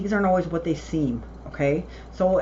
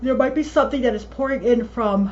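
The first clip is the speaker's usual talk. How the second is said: words pulled out of shape by a yawn, pitched up; 5 semitones higher, 4 dB louder than usual. Giving a reading to viewers while tired: yawning while talking. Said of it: "I'm sorry for yawning".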